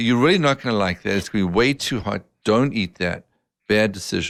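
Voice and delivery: ordinary talk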